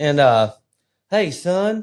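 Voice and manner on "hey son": very high, put-on Southern Texas accent. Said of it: "from Texas".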